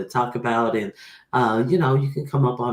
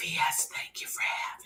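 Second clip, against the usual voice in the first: put-on whisper, quieter. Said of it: "I'm just gonna whisper".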